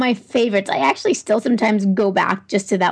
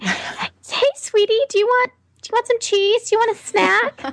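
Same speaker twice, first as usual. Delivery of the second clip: put-on baby voice, much higher pitch; 13 semitones higher than usual. Describing how she talks when she is with Reese, the speaker uses a baby voice. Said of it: "I talk in the baby voice".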